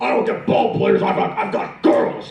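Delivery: angry, rough-edged coach voice. Showing how an angry baseball coach voice comes out: angry Tom Hanks impression. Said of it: "do angry Tom Hanks".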